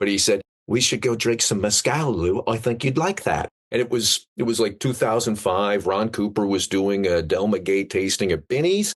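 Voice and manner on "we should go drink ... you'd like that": horribly done, bad put-on British accent. Retelling what a dearly departed friend said: imitating Mark Cox's British accent. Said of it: "forgive the accent".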